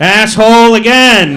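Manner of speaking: exasperated outburst, loud, slow and high.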